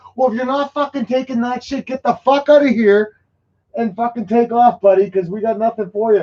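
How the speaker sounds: furious yelling. Retelling losing it at the guy on the ship: imitating own angry yelling. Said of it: "'Cause I lose my shit at these idiots".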